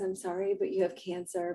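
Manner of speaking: very quiet, soft delivery. Acting out an imagined movie doctor giving bad news: very quietly. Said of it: "very quietly says".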